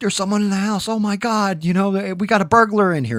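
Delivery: very high, shrill, frantic, panicked screamed yell. Retelling waking the mother at seven: retelling own panicked yell. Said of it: "is what I'm yelling".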